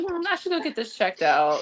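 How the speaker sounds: ordinary talk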